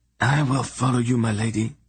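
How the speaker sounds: quavering, trembling, wavering voice. Reading a starving man's vow to his lady: quavering voice. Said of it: "he declared in a quavering voice".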